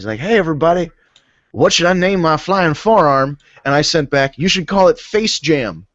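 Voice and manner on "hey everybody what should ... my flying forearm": badly done, put-on Southern accent. Retelling a Twitter post, voicing AJ Styles: bad Southern accent as AJ Styles. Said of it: "I'm doing a really bad Southern accent for A J Styles".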